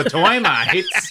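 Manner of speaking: blurted old cartoon character voice. Retelling blurting out the joke during a termite inspection talk: Popeye voice. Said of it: "And then I literally just go".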